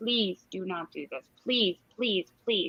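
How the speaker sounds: acted pleading tone. A mother retells how she pleaded with her daughter, retelling begging. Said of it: "begged my daughter".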